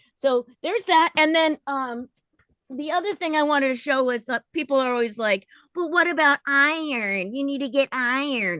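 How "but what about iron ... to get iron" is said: nagging, reproachful voice with iron drawn out. Imitating people who give a hard time about iron: imitating nagging critics. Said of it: "I'm imitating the people that give me a hard time".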